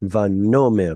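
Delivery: vanomer with stress on penultimate syllable "no". Hebrew reading lesson, teacher reminds the learner: stress on no in vanomer. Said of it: "Be sure to put stress on the uh, penultima here".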